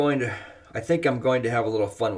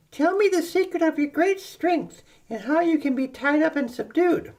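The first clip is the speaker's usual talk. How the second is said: put-on nagging voice, higher. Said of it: "pestering and nagging me".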